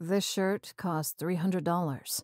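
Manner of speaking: low, quiet, flat deadpan with no inflection. Asked about his shirt with holes, he answers the narrator: deadpan. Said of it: "He deadpanned".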